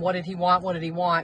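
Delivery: normal talking voice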